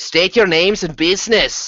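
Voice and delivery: grating, harsh, high-pitched hiss. A narrator voicing an unseen voice demanding names and business: harsh hissing voice. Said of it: "a harsh voice hisses".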